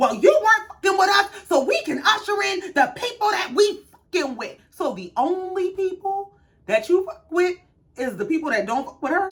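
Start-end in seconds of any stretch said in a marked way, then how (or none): 0.0-4.6 mock heated screaming, pitched up. Retelling an argument, you act out what Simone said back to Quad, imitating Simone screaming. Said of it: "Simone starts screaming".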